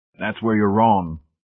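ordinary delivery, nothing marked

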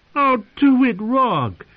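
very high, very slow, drawn-out pleading. One man urges another who is threatening a captive woman; pleading. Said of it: "pleaded Shadwell".

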